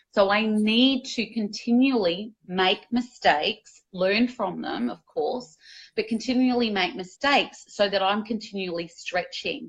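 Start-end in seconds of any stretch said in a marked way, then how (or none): none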